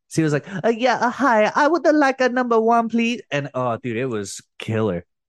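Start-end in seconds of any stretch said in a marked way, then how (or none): 0.6-3.2 loud, very high-pitched comic voice. Retelling a friend ordering at McDonald's: Miss Swan voice. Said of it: "he did the whole order as Miss Swan from Mad T V".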